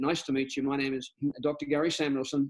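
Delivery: ordinary delivery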